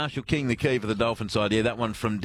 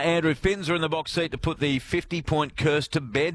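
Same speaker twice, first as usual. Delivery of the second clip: normal talking voice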